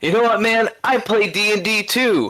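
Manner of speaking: mock, very high, enraged, furious screaming shout. Retelling a scene where a crowd member screams out: imitating a furious scream. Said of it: "He just screams out".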